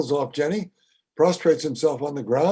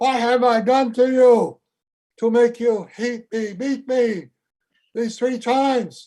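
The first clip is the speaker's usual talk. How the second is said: higher-pitched talking donkey character voice; 8 semitones higher than usual. Telling the story of Balaam, the speaker voices his complaining donkey in a donkey voice. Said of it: "that's my best ass voice".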